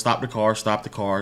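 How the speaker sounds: ordinary delivery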